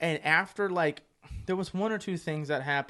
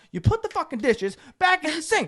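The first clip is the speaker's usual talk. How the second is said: mock very high, loud, enraged, furious yell; 12 semitones higher, 8 dB louder than usual. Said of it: "So I'm pissed".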